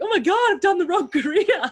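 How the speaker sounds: mock panic, very high-pitched, rushed outburst. Retelling a past reaction to being told about a gift: imitating own past panic.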